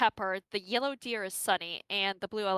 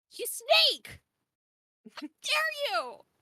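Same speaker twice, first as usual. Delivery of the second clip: very high, very slow, swooping put-on deer voice. Voicing a yellow deer accusing the others: high-pitched put-on deer voice. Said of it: "a yellow deer sits up, stands up, and goes".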